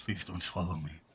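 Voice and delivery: speaking very quietly. Playing a character inside a creature's mouth: speaking very quietly. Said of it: "Rem very quietly goes".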